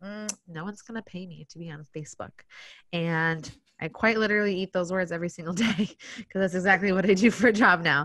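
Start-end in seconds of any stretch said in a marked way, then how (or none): 0.0-2.3 put-on, very quiet, hushed, flat deadpan. Recalling her reply to a man who suggested she do it as a job, retelling a deadpan reply. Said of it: "I looked him deadpan in the face".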